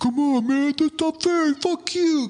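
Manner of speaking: high, whiny mock rage like a sore loser.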